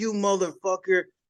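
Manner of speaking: mock shouty outburst, high and held back. Retelling a squad leader catching him smoking: imitating someone yelling. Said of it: "yelling and screaming".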